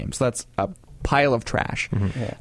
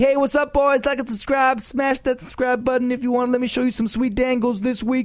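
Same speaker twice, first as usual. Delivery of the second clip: very high-pitched, pumped-up vlogger patter; 11 semitones higher than usual. Speaker mocks how a typical YouTuber opens a video: typical YouTuber impression. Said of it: "That was a perfect impression?".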